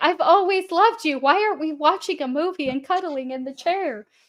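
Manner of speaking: high-pitched voice done as a pet dog. Joining in voicing the dog begging at the door: voicing the pet dog. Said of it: "He's like".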